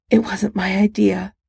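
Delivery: strained delivery. Narrator reads a character's hesitant reply, in a strained voice. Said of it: "she finally said in a strained voice".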